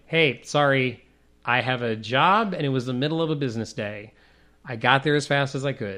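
plain

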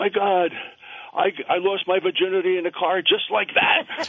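mock yelling, woman's voice. Retelling what a woman yelled about a station wagon at a parade, retelling her yell. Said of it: "and she yells".

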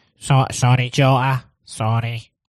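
nasal put-on voice. Doing an impression of the Hearts manager apologising to Jota: Stephen Naismith impression. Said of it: "here's my impression of, uh, Stephen Naismith".

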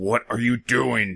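words pushed slowly through clenched, gritted teeth. In a role-play scene, a character reacts to a companion's challenge, through gritted teeth. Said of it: "through her teeth".

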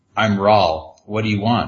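normal talking voice

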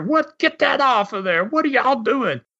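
unhinged, very high-pitched, shrill screaming. Speaker retells Carson screaming at Thatcher on the set, retelling a scream. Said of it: "He starts screaming at Thatcher".

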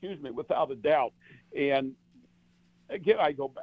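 voice catching, choked up with emotion. Talking to a coach about his young team, getting all choked up. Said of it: "got me all choked up".

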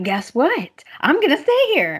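cheery, pleased, sing-song voice. Retelling a soap scene, imitating Thomas all smiles: imitating Thomas all smiles. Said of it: "Thomas is all smiles and he's like".

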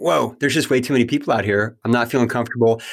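ordinary talk

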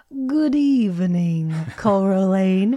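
slow, drawn-out, dark, deliberate spooky voice. Greeting the co-host at the start of an episode: Alfred Hitchcock impression. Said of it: "I was trying to do my Alfred Hitchcock impression".

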